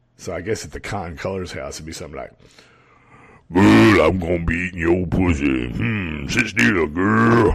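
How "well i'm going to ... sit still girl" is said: loud, over-the-top, exaggerated butch voice.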